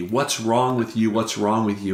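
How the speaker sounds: plain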